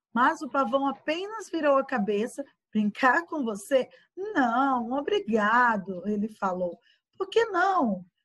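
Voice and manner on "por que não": surprised, caught off guard, high-pitched. A little tiger questions the peacock who refused to play, surprised.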